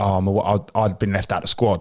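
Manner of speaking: ordinary delivery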